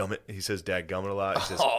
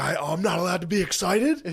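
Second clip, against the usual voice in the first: mock, fired-up, high raised yell; 9 semitones higher than usual. Retelling how a man yelled at an official during a game, retelling someone yelling. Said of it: "He starts yelling that to the D N".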